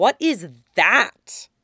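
suspicious, wary, pointed, with swooping pitch. Anakin questions Obi-Wan, demanding suspiciously. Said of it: "Anakin demands suspiciously".

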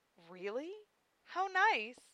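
sugary, high, sweet cooing voice. Hearing him talk excitedly about a painted skateboard, she responds, cooing. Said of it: "Silphiel cooed".

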